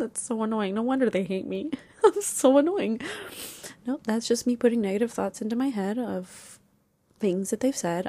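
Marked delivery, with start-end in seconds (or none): 0.0-3.0 tearful, holding back tears, on verge of crying. Speaker talking about being hurt by someone, holding back tears. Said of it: "I'm trying not to cry again".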